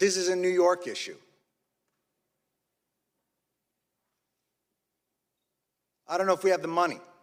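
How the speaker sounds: openly angry, undiplomatic delivery. Addressing the people gathered here about those made sick, sounding angry. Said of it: "I'm sorry if I sound angry".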